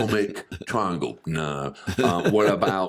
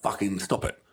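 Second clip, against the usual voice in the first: acted utter despair, quieter; 4 dB quieter than usual. Imagining a comedian dying on stage hearing laughter: imitating utter despair. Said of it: "or it could be utter despair".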